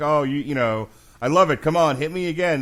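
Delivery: breezy, shrugging swagger. Imitating a hurt fighter shrugging off punches: mock nonchalant taunting. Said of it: "trying to shrug it off and act like".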